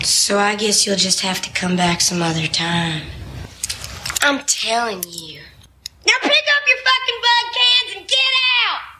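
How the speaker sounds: put-on squeaky, throaty voice. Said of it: "That voice, her voice, was incredible".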